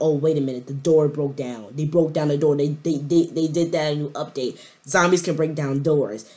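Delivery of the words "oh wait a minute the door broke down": ordinary talk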